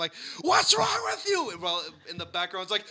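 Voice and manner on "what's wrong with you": shrill, very high, loud, furious shout. Retelling yelling out a car window at a driver: imitating own angry yelling. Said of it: "I started yelling out the window".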